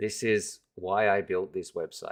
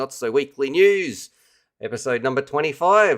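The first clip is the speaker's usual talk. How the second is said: put-on New Zealand accent, raised and pitched up; 6 semitones higher, 8 dB louder than usual. Speaker introduces a reviewer's weekly news show: put-on kiwi accent. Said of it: "that's my best best Kiwi accent right there".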